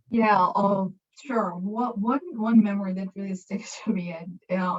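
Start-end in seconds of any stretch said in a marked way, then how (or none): 2.0-4.1 amused, chuckling through the words. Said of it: "now I'm laughing".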